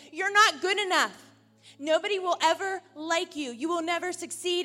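mock accusatory shouting. Voicing the devil's accusations against the listener, acting out shouted accusations. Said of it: "the devil over here shouting accusations".

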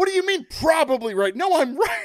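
very high-pitched mock furious screaming. Retelling Boone's outburst at the home plate umpire, imitating Boone screaming. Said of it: "He's just screaming at the end".

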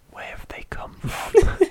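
eerie, breathy, creepy whispered horror-film voice. Discussing a creepy fact about bodies on the episode, in a creepy whispery Blair Witch voice. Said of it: "like this in this creepy, whispery Blair Witch voice".

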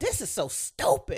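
acted-out yelling. Recounting watching television near daughter Deja, retelling a yell. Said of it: "And I'm yelling".

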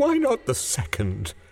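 feverishly agitated. The old woman presses her husband for the second wish, feverish. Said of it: "said the old woman feverishly".

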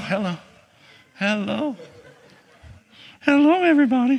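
put-on high-pitched baby talk in a grandpa-style voice. Grandpa greets everybody the way he talks to little Eva, high-pitched voice. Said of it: "She loves that high-pitched voice from Grandpa".

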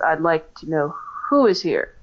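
ordinary talk

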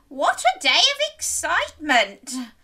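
spoken through a high, drawn-out laugh. Granny, hugged by Little Red after the wolf is chased away, laughing. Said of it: "laughed Granny".

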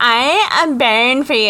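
put-on high, over-the-top valley girl accent. Describing how a cast member delivered the line: super valley girl voice. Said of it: "a super valley girl".

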